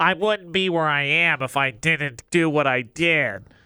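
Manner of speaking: put-on nasal voice. Speaker acts out an annoying person to make a point, nasal annoying-person voice. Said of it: "I don't talk out of my nose".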